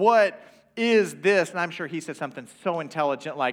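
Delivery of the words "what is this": very loud, emphatic, angry, pitched-up delivery. Retelling what they said to him while mad, retelling an emphatic question. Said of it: "being more emphatic like that".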